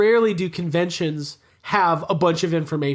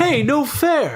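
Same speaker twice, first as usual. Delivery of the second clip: high, bad, pitched-up creature voice; 8 semitones higher than usual. Joking about the movie's monsters: bad Alf impression. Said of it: "That's my bad Alf impression".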